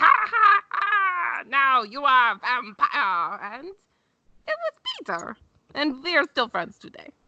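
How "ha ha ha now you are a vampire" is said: slow, drawn-out creature screech on every word. Telling others how he was turned, screeching like Peter the creature.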